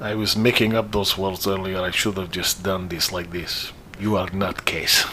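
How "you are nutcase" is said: joking put-on Russian accent, broken English. Acting out a man who walked in and closed his door, in a russian accent. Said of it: "starts talking in a Russian accent".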